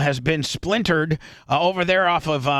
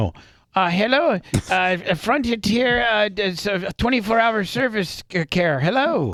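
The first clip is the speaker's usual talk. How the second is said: mock, fake Indian accent; 5 semitones higher than usual. Playing a Frontier customer service agent in a radio bit, in a put-on Indian accent. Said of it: "Great accent".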